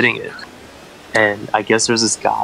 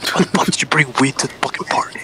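harsh, urgent, angry whisper. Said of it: "whispered to him".

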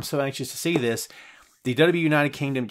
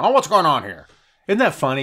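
exaggerated, over-the-top voice with swooping pitch; 5 dB louder than usual. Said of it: "It's always like this. It's really just over the top".

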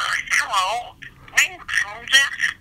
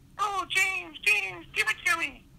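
female cat voice, much higher and quieter; 10 semitones higher, 7 dB quieter than usual. Performing a suggested role-play line, in a female cat voice. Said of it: "maybe your best woman cat voice".

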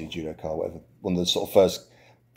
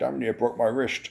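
put-on heavy Dutch accent laid on thick, pitched up; 5 semitones higher than usual. Retelling what John Blooming said after trying to break a tile, in John Blooming's thick Dutch accent. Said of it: "his thick Dutch accent was like".

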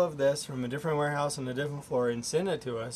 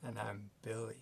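low, hushed, very quiet seductive voice; 5 semitones lower, 17 dB quieter than usual. Introducing himself on the show after his co-host: seductive voice. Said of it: "You sounded like you were trying to seduce someone".

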